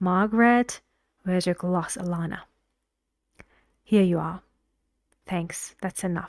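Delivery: stiff, flat, unnatural, robotic reading. Showing how a rude, robotic host sounds: deliberately robotic, unnatural reading. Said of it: "it's very robotic and, um, unnatural".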